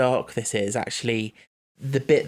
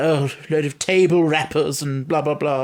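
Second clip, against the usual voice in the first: put-on snobbish, old-fashioned, dismissive tone; 3 semitones higher, 4 dB louder than usual. Describing a character from a remembered episode, in a snobby old-worldy Charles Dickens voice. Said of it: "the snobby, old worldy voice".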